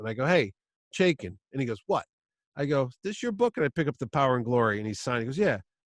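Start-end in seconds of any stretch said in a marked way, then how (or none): 0.2-1.3 put-on New Haven attitude. Retelling calling out to an author signing books, acting out New Haven attitude. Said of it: "I get my New Haven up".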